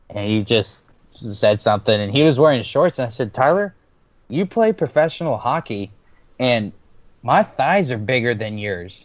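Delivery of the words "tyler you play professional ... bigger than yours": light, good-natured, acted playful teasing tone. Speaker recounts teasing a hockey player, retelling a joking tease. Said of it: "I jokingly".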